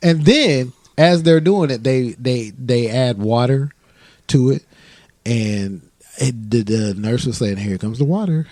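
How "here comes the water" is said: put-on nonchalant, casual tone, higher. Retelling a painful procedure, imitating the nurse's casual tone. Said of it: "He said it just like that".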